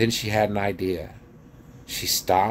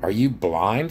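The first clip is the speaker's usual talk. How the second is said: usual speaking voice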